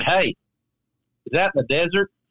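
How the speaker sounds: put-on heavy, laid-on Tennessee accent. Retelling what a caddy from tennessee asked about golf club shorts, in a thick tennessee accent. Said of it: "had a very thick accent".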